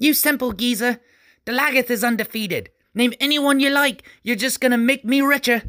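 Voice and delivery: very high, small, shrill screaming voice. Narrator reads a tiny voice screaming at an old man, in a tiny screaming voice. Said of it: "heard a tiny voice scream out".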